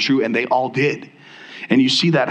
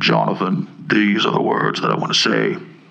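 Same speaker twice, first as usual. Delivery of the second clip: deep, creaky, rasping voice with a heavenly quality; 5 semitones lower than usual. Describing how God might speak to him, do a put-on God voice. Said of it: "It'll be a really weak God voice".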